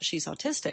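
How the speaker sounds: plain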